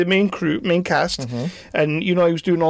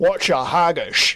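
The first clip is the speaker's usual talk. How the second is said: heavy, exaggerated Scottish accent. Imagining how an actor would first speak in a film, the speaker does a Sean Connery impression. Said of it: "he's going to be like proper Sean Connery".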